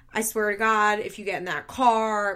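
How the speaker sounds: plain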